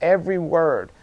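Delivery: every word stressed, falling at the end.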